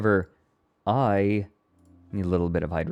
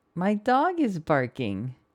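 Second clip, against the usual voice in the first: very high, swooping text-to-speech read-out voice; 10 semitones higher than usual. A speaker keeps trying to get the inflection right, in TikTok text-to-speech voice. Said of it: "It's close".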